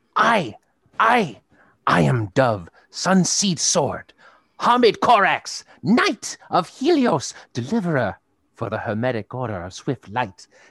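squawky talking bird character voice with swooping pitch. Narrating a scene, the speaker voices a bird landing near a new wolf, squawking. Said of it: "and he squawks".

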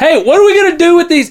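very high, full-throated, top-of-lungs holler. Retelling what a man yelled when he came out, re-enacting a top-of-lungs yell. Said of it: "he yells at the top of his lungs".

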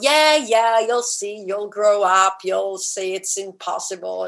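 mock patronizing tone with drawn-out "yeah". Imitating how adults answer kids who share big dreams, mock-condescending. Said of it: "we kind of like condescendingly go".

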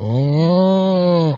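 sickly parrot moan. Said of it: "just him mimicking Bob being a little bitch".

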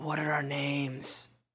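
soft, slow, menacing whisper. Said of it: "that whispered threat".

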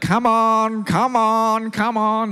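very slow, drawn-out, high herding call. Speaker coaxes sheep down by imitating grandfather calling sheep. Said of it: "using my mimic my grandfather".

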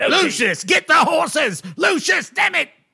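very high, shrill, loud goblin voice yelling. In a game scene, a character charges out the door calling for Lucius, goblin voice yelling. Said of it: "He's talking in goblin again".

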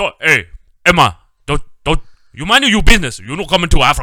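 bossy voice, very loud and high-pitched. The speaker launches into an impression of a man they work with: imitating a coworker. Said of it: "I started to do the guy I work with".

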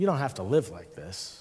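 quiet, soft-spoken, soft, low voice. Retelling a friend interrupting his rambling about being a mess; imitating a soft voice. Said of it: "he said in a soft voice".

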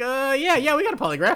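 very high-pitched, loud, nervous voice. Retelling how Charles answered Betty about a polygraph: nervous Charles voice. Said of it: "nervously looking at the camera and being like".

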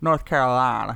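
mock overdone pronunciation of "North Carolina". Retelling how a character said where he is from: imitating exaggerated "north carolina". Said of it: "he had to say it really exaggerated".

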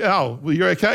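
normal talking voice

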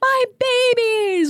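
high, slow, drawn-out joyful scream.

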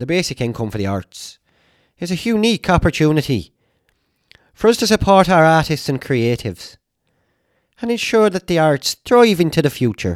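terrible put-on Irish accent. Quoting the Irish Prime Minister's statement to listeners in a terrible Irish accent. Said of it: "this is terrible accent".

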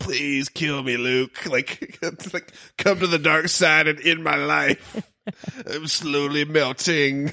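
put-on high, slow voice of very old man. Acting out a very old man who begs Luke to kill him: imitating a very old man. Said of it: "he was so old, he's like".

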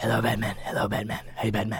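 low, hushed voice kept quiet and deep. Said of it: "all the Batmans would get together and be like".

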